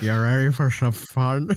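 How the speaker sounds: put-on gummy, dentures-out, toothless old lady voice. Joking that Sega is an old lady taking out her dentures: old lady with dentures out. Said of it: "the old lady who takes out her dentures and go".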